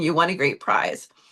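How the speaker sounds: normal talking voice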